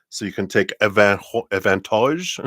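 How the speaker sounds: clumsy, bad put-on French accent. Wrapping up the announcements, the speaker slips into a bad French accent. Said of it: "That's my French accent".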